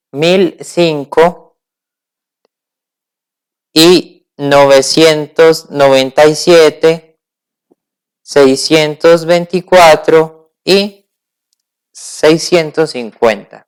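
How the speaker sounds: very slow, spaced-out dictation, numbers read slowly.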